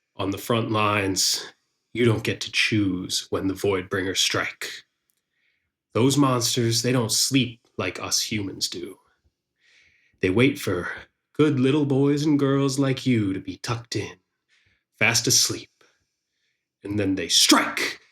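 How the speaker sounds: very relaxed, laid-back, unbothered commanding calm. Game master voicing a strong man speaking to the players' characters, very relaxed. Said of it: "You see [name], as always, wearing deeply worn and dulled armor, but his sword that lays on his lap in front of him is in pristine condition. He pulls it out very gently and slowly and dabs at it / Th".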